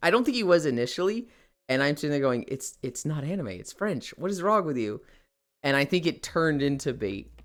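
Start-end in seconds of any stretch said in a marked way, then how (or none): 2.5-5.0 put-on frazzled, flustered voice. Retelling own reply to a cousin who hates anime: imitating own frazzled self. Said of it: "I was frazzled".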